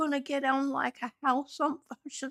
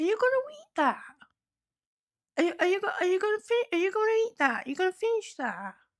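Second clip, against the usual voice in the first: eager, stumbling, sing-song pestering pet voice; 5 semitones higher than usual. Voicing the pet Shuvi, who keeps asking about the food: voicing Shuvi asking for food. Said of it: "Shuvi's like".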